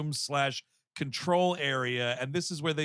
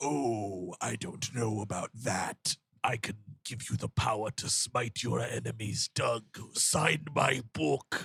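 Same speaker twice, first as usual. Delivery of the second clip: deep demon character voice; 5 semitones lower than usual. Retelling a cartoon episode's scene, voicing a demon guy. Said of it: "this demon guy's like".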